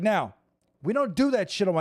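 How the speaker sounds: put-on yelling. Retelling how he answered a player after beating him: imitating himself yelling. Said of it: "I started yelling at the dude".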